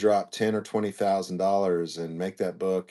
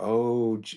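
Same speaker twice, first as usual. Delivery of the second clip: very drawn-out, stretched Southern Oklahoma drawl; 3 semitones higher than usual. Quoting what Sandy always says, imitating Sandy's drawn-out Southern drawl. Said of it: "like it's a very drawn out Southern Oklahomish".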